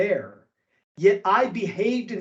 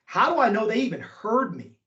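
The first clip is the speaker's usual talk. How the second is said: normal talking voice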